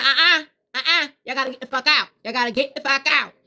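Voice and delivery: no-nonsense, stern mother voice. Recounting telling spirits in the house to get out; retelling using her mom voice. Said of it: "I gotta use my mom voice".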